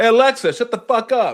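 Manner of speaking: shrill, very high, loud yelling. Retelling how they yell at the voice assistant, retelling own yelling. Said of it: "when I yell at Alexa".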